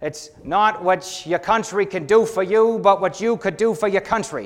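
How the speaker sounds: put-on Boston accent. Speaker quotes an old Kennedy adage in a talk about loving Jesus: John F. Kennedy in Boston accent. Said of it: "That's my Boston accent".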